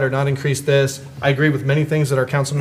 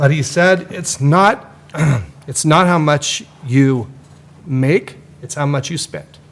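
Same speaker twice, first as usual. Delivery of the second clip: choked up, emotion catching, voice breaking; 3 dB louder than usual. Speaking publicly about their dad who just passed away, quoting him, choked up. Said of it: "I'm sorry I'm getting choked up".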